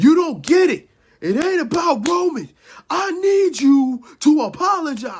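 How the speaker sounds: mock, repeated, insistent yell, very high-pitched. Retelling a wrestler's repeated demand to Punk: imitating someone yelling. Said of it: "Jay kept yelling to Punk".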